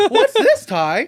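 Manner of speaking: very high cartoon creature voice. Retelling a funny scene where Agumon finds Ty's magazines: Agumon voice. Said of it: "I just did a good Agumon".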